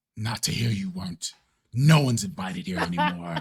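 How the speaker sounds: low growling voice. In a role-played scene, a character answers the newcomer: low growling voice. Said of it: "you hear a low growling voice".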